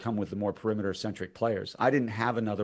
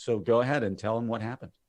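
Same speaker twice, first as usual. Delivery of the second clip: plain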